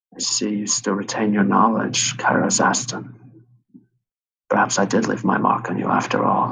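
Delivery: hushed, very low, very quiet, utterly changed voice. Voicing a possessed character who speaks again: very low, very quiet voice. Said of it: "she speaks in a voice completely different. Not just a very low, very quiet voice".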